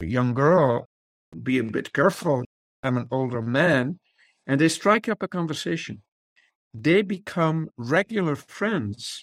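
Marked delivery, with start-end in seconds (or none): 0.0-4.0 put-on French-accented English. Retelling an older man's words to a girl who bumped into him, in a French accent. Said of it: "with a French accent".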